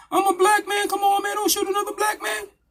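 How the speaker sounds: very high, mock screaming and wailing in a pleading tone.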